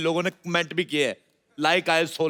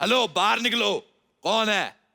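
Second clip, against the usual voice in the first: high, pitched-up call-out; 5 semitones higher than usual. Calling out whoever has taken the room, shouting. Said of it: "सुबह सुबह क्यों चिल्ला रहे हो?".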